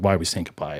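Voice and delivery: ordinary talk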